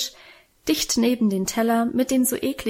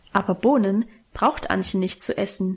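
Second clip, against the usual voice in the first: plain reading voice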